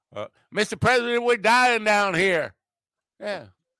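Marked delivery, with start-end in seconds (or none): 0.5-2.5 put-on Louisiana accent pushed very high in pitch. Answering a guess about an accent, imitating James Carville: James Carville Louisiana accent. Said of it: "James Carville. That, is that Louisiana?".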